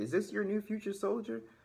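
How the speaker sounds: acted teasing, taunting tone, pitched very high. Retelling a recruiter asking another recruiter, imitating a recruiter teasing. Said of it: "teasing me in front of everybody".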